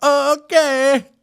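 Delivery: very high, jittery, nervous, unsure squeaky tone. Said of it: "Are you in meetings just going".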